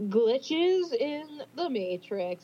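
slow, drawn-out, playfully spooky delivery. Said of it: "how to say that in a fun way".

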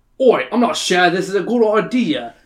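put-on plain, standard, everyday Australian accent. Narrator reads a friend, Alan, voicing doubt as the group heads out. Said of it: "with his standard Australian accent".

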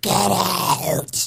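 gurgling, gargly, rough, creaky frog-in-the-throat female voice. Retelling a voice heard while at the computer, gargly female voice. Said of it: "the voice was so gargly like a frog in your throat".

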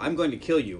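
normal talking voice

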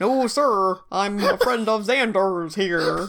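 clumsy, bad, fake put-on American accent. Quoting a British-accented character faking an American accent: bad American accent. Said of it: "pretending to do a bad American accent".

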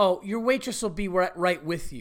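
put-on snippy tone with attitude. Retelling what a waitress said to the table: imitating a waitress with attitude. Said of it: "with an attitude".

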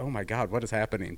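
ordinary talk

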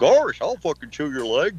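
high cartoon voice, pitch swooping and swinging around. Joking about a cartoon image with a friend: Goofy voice. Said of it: "Goofy go".

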